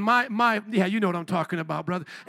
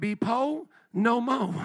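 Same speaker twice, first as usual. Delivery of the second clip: very slow, drawled inner-city dialect, r's dropped. Retelling how friends from the inner city say it: imitating inner city dialect. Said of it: "like my friends from the inner city say".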